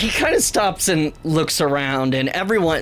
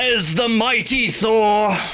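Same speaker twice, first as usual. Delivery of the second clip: grand, mighty godlike announcing voice, pitched up; 5 semitones higher than usual. Narrating the scene as Thor stands up tall and speaks, booming Thor voice. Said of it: "kind of booming voice says".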